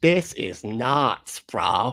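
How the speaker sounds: put-on Boston accent. Teasing the other speaker's quote: mock boston accent. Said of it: "that Boston?".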